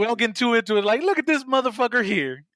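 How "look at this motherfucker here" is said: charismatic, cocky trash-talking voice. Imagining a film villain trash talking: Samuel L. Jackson voice. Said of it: "Just shit talking like Samuel Jackson".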